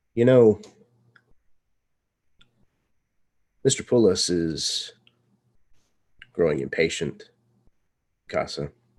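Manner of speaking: low, serious voice. A storyteller voices Nikit, done messing around, leveling her gaze at Casa: lowered voice. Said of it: "she lowers her voice and changes her demeanor slightly".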